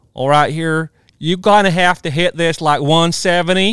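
put-on southern US Georgia accent. Retelling how he told a player what to hit, in a Georgia accent. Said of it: "you got the Georgia accent".

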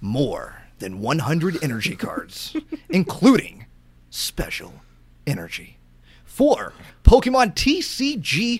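epic, dramatic movie trailer announcer voice. Asked to get the other host pumped while reading a list: movie trailer voice. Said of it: "read this more like a movie trailer".

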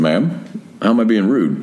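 ordinary talk

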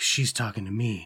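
mock muttering under breath. Retelling what a man said to himself; muttering under his breath. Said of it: "Under his breath".

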